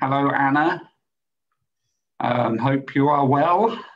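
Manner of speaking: calm, unhurried, very slow, drawn-out delivery. Greeting someone who has just arrived, speaking really slowly. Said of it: "I said that really slow".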